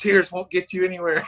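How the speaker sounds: mock high-pitched screaming. Retelling how a man screamed at a crying little girl in her hospital room, imitating someone screaming. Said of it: "and just start screaming at her".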